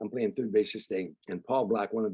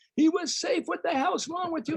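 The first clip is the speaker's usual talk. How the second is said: put-on screaming, very high-pitched. Retelling a softball game where a coordinator screams at the umpire: imitating Craig Tennis screaming. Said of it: "starts screaming at the umpire".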